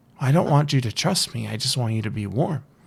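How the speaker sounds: very sweet, sugary, inviting, coaxing voice. A figure holding out a hand invites someone in from the cold, sweet, soft voice. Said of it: "in a very sweet, soft voice".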